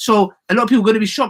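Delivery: slightly fast, hurried, rattled-off talk.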